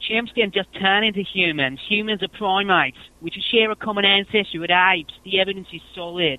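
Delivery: high-pitched whiny voice. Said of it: "I'm gonna do a whiny [name]".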